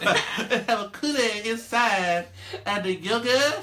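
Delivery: exaggerated, loud, fake Chinese accent. A comedian riffs during an interview, in a put-on chinese accent. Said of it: "It's already going to Miss Swan".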